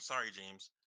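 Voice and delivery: said under the breath, muttered quietly. Speaking in character to James during a fight: said under his breath. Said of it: "I'll just say under my breath".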